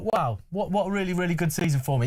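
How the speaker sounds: ordinary delivery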